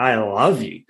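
with passion. Showing how a client is coached to say it to themselves, saying it with passion. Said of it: "Now say it with passion".

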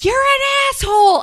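shrill, very high-pitched, loud yell. Telling a story about yelling at their dog in the yard, retelling a yell. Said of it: "and I yell".

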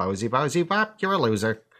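high, goofy puppet voice. Retelling a bit of an angry, foul-mouthed puppet: George the puppet voice. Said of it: "I used to do an impression of him".

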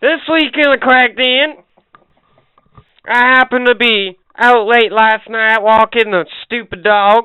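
fake Southern US accent. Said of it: "Now that you got me my southern accent".

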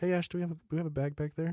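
quiet, very calm, slightly high-pitched. Retelling asking for a bag while feeling sick: quiet calm voice. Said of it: "this quiet, like".

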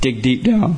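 breaking voice, cracking hard. Pressing the other speaker to answer honestly, voice cracking hard. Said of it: "my voice cracked hard".

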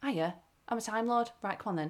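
flat, even delivery with no build-up. Mocking how a newer era of a show sounds: Jodie Whittaker impression, no drama. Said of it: "what I get in this Jodie Whittaker era".

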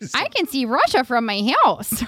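animated sing-song delivery, pitch swooping all over. Showing the others an old impression she used to do: Sarah Palin voice. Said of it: "I used to do a Cara Palin".

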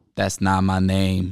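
put-on flat deadpan delivery. Retelling how a man corrected the speaker about his name, retelling a deadpan reply. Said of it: "I could hear the deadpan".

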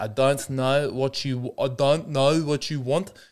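put-on slow South African accent, Lebanese-tinged. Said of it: "It is very Lebanese".

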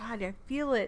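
usual speaking voice

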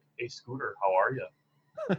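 plain North Dakota accent, swooping tune. Comparing regional accents, speaker demonstrates a deadpan North Dakota accent. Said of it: "a North Dakota accent is more like".

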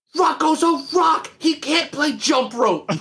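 very high, squeaky, snapping retort. Describing a clip where Elmo loses it, imitating Elmo snapping. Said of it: "just starts snapping".

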